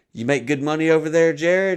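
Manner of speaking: patronizing, talking down. Retelling a host's question to a guest: imitating a condescending tone. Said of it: "it's so condescending".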